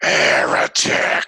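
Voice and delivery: harsh, loud, grinding, rasping screamed word. Narrating a battle-axe strike, the attacker screams out: grinding screaming voice. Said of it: "you hear this kind of grinding voice scream out".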